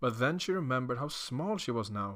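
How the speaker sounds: ordinary delivery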